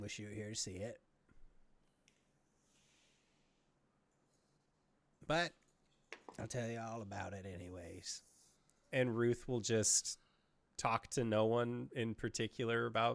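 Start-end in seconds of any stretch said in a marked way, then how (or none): 0.0-8.2 mumbling quietly under breath, quieter. Voicing Ruth alone under the stars: muttering under his breath. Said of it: "you would just hear him mutter, uh, under his breath".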